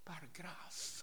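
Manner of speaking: whispered "par grâce".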